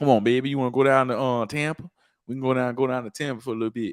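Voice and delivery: persuasive put-on New Orleans accent. Act out how a man talks to his girl, in a put-on New Orleans accent. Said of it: "I'm gonna do the New Orleans accent too".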